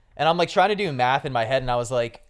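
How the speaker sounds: ordinary talk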